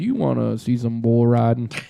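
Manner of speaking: very low, deep speaking voice. Imagining Sam Elliott being there, act out what he says in a deep Sam Elliott voice. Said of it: "he says it in his deep voice".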